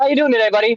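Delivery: put-on breezy, offhand, casual, nonchalant tone. Retelling a phone call from mom: imitating mom's nonchalant tone. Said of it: "she just nonchalantly was like".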